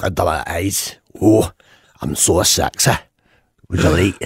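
imitated Scottish accent. Answering what Scots sound like: put-on Scottish accent. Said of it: "what do Scots sound like?".

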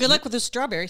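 sudden loud, booming pro broadcaster voice. Signing off a message to the hosts, loud booming voice. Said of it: "that was loud".

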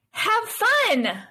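sincere, genuine, very high voice without sarcasm. Practicing sarcastic versus sincere readings with a partner, sincere, non-sarcastic. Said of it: "You do the non-sarcastic next one".

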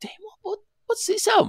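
very high, amazed squeal.

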